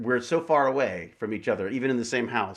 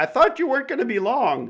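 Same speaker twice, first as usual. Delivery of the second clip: high, piping, very high-pitched voice; 4 dB louder than usual. Guessing what a wife says about a declined call: imitating Jane. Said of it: "I don't know why she talks like that".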